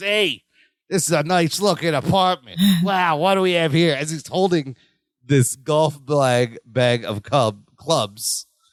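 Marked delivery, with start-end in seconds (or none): 0.0-4.0 put-on New York accent, much faster. Retelling how a man acted out a burglar entering the apartment, put-on New York accent. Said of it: "New York accent".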